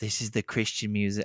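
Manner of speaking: attempted Australian accent. Imitating the band saying a line: attempted australian accent. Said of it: "I can't even do an Australian accent".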